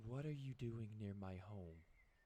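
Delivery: soft, beautiful, angel-like voice. Game master voices a woman standing behind the party: lovely angelic voice. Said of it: "in a lovely, beautiful voice that sounds like an angel".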